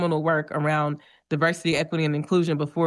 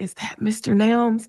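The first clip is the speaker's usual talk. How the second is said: high, voiced stage half-whisper; 6 semitones higher than usual. Retelling what a student asked at Umoja Day: retelling a half-whisper. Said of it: "one of them whispers".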